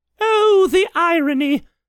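laughing, chuckling, very high and very loud. Elizabeth recalls a man's remark to reporters, chuckling. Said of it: "Elizabeth chuckled".

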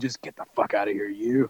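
quiet, low, threatening, menacing half-whisper. Suggesting an alternative to yelling at someone, the speaker demonstrates a quiet threatening half-whisper. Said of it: "Just whispering quietly, threatening".

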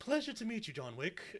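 put-on refined, well-spoken English accent. Voicing an imagined pit bull character, in a well-spoken english accent. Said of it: "well-spoken, English accent".

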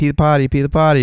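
put-on high small-child voice, pleading. Retelling how the toddler stalled at bedtime: imitating a toddler. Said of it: "He'd be like".

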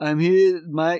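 mock dull punch-drunk voice. Retelling a boxer's weigh-in speech, imitating a dull punch-drunk boxer. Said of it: "he's just really dulled".

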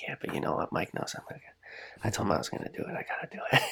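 soft, quiet, near-whispered muttering to oneself.

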